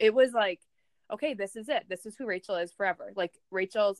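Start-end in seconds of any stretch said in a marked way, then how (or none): none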